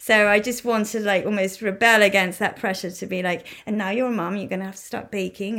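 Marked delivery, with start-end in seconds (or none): none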